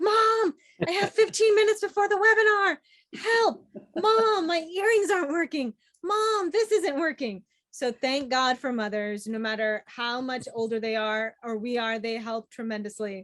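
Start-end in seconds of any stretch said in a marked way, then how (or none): 0.0-7.4 very high-pitched yelling, calling out. Retelling rushing before a webinar, imitating own past yelling to mom. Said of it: "I'm yelling for my mom".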